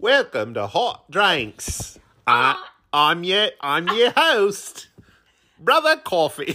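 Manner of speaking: put-on odd Cockney accent. Introducing the show and oneself as host: weird Cockney accent. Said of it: "a weird Cockney accent".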